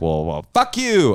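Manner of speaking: put-on boss voice with flaring arrogance. Acting out a boss whose ego flares up, imitating the boss's voice. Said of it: "that was rude that I did that voice".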